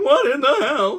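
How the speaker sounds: voice cracking high and loud. Repeating a complaint about packaging: Seinfeld voice. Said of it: "I just sounded like Seinfeld there".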